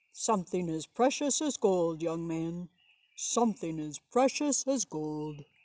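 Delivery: big, booming giant voice. Reading a picture story aloud, voicing a character: giant voice. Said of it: "I tried to make a giant voice".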